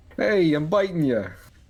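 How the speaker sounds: put-on spider voice with a New York accent. Voicing a tarantula in a playful group bit, New York accent. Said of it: "Just has a New York accent".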